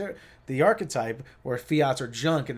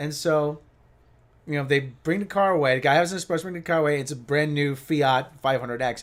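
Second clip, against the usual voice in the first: ordinary talk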